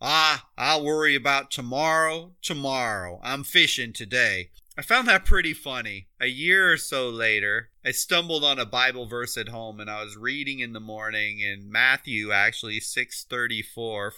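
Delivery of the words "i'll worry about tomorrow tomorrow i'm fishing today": put-on heavy Southern Georgia drawl. Quoting a man's comeback in a small town, very Southern Georgia drawl. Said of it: "with a very Southern Georgia drawl".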